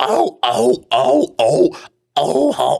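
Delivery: very high, very slow creaky voice, stretched oh sounds. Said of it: "you keep trying different things with your voice".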